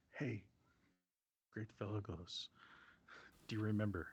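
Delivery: hushed, quiet, soft voice. Speaking in character to another figure in the story, said quietly, not yelling. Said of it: "And I say it quietly. I'm not yelling this".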